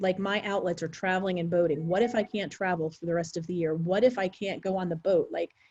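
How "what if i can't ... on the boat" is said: plain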